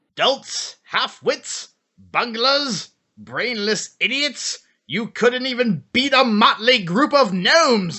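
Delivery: high, drawn-out villain voice. Opening an argument as the villain's advocate: Skeletor voice. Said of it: "all the Skeletor impressions".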